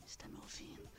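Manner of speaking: barely audible, very soft whisper. Showing a trick on a telemarketing caller: very quiet voice. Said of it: "Bem baixinho".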